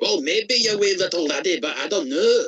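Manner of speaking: high Scottish-sounding voice. Chatting while playing a game for a YouTube audience, in a Scottish accent. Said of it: "I sound like I'm from Scotland".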